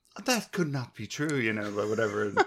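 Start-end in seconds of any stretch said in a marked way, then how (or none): 0.2-1.3 prissy, mechanical robot butler voice, pitched up. Describing how one Star Wars droid answers the other, in a C-3PO voice. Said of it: "You even did like a 3CPO type of voice".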